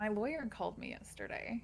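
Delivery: hushed whisper under the breath. Updating the other speaker on an attempted murder case, whispering. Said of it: "I gotta whisper".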